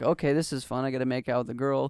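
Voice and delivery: ordinary talk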